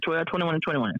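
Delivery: quick, rapid delivery. Showing how the wedding date should be said: said fast. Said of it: "you gotta say it fast like that".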